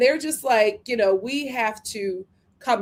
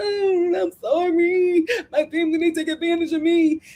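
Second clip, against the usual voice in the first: pitched-up, small, manipulative crying, pleading voice; 8 semitones higher, 3 dB louder than usual. Retelling how a woman answers her family, imitating Sheena crying. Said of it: "does her little crying".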